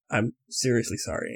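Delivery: mock whispered, straight-faced, dead-serious solemn "sorry". Retelling a character's apology while holding in joy: imitating a straight-faced apology. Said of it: "he stayed completely straight faced, straight back".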